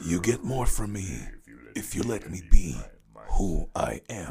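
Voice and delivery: booming, very loud, deep movie-trailer announcer voice. Repeating a line after being asked to say it deeper: deeper voice. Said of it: "in a deeper voice".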